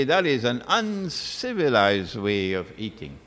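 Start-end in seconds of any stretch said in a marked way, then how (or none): none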